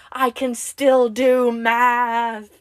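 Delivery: very loud, high, drawn-out scream, "math" stretched out. The speaker answers simple math on a garage whiteboard, retelling own screaming. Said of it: "I just start screaming".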